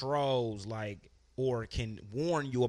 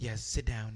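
put-on nice, soothing, calming voice; 2 semitones lower than usual. Retelling what a psychic lady in a documentary said: imitating a psychic's nice calming voice. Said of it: "She had that real nice, calming voice".

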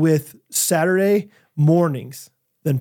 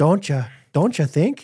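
put-on Northern accent, laid on a bit. Imitating a friend with an embellished northern accent. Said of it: "He's got an Northern accent".

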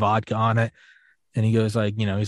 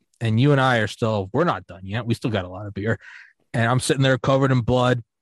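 normal talking voice

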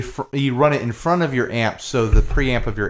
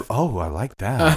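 put-on creepy, pleased, delighted voice. Imitating fifties recordings of people hearing reverb: creepy imitation of pleased listeners. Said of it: "So creepy".

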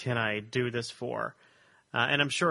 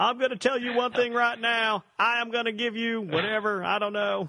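very high pitch, deliberately badly done; 10 semitones higher, 3 dB louder than usual. Joking about making campaign promises: terrible Bill Clinton impression. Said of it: "That's my terrible Bill Clinton person".

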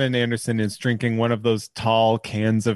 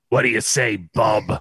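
throat-shredding, raspy cartoon hero growl. Asked to do voices on a podcast, the speaker does a 90s cartoon Wolverine voice. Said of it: "to talk like 90s Wolverine from the cartoon".

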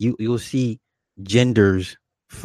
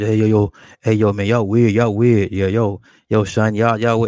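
mimicked forced, faked deeper voice. Speaker mocks a woman who fakes a deeper voice, imitating a forced deeper voice. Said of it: "She tries to make her voice deeper".

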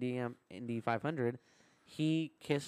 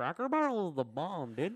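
made-up Iowa hillbilly voice, high and swooping; 4 semitones higher than usual. Retelling a trip's running joke about a guy from Iowa, in an Iowa hillbilly redneck voice. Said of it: "I made up a new voice".

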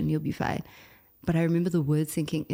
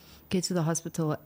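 ordinary talk, nothing marked

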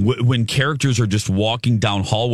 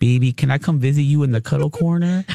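tiny, small, put-on little pet voice; 4 semitones higher than usual. Retelling asking him if she can visit the cuddle corner, in her little voice. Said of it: "I go into my little voice".

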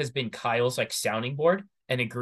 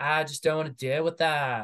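put-on weird, off-kilter British accent; 3 semitones higher than usual. Retelling what Natasha said, imitating Natasha in a British accent. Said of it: "weirdest British accent I've ever heard".

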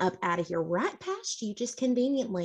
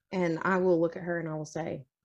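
usual speaking voice

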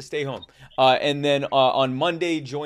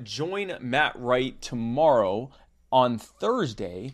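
very slow, stretched-out, drawn-out speech. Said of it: "I'm speaking slowly so I can pull up who his guest is".

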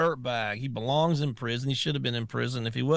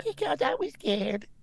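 put-on very high-pitched little-girl voice; 14 semitones higher than usual. Acting out a questioning, imitating Blasey Ford as a little girl. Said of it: "You sound just like her".

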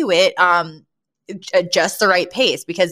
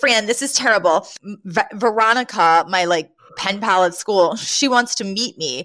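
normal talking voice

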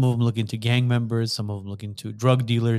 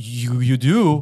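stuttering, stammering, startled drill sergeant voice, raised; 5 dB louder than usual. Retelling a drill sergeant's surprised reply: imitating stuttering. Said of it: "he kinda stuttered".

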